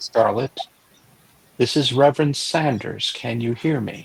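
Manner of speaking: hushed whisper. Voicing a reverend leaning over a girl: whispering. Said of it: "I'm going to whisper into her ear".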